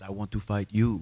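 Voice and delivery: put-on Brazilian-accented speech. Retelling what a man said when he came up to the speaker, Brazilian accent. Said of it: "in his Brazilian accent said".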